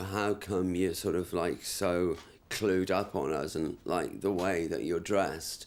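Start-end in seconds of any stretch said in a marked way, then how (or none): none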